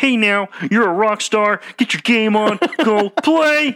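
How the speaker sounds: very high, squeaky, loud cartoon frog voice. Mimicking a voiceover supposed to be Patrick Mahomes, in a Kermit the Frog voice. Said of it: "it sounds more like Kermit the Frog".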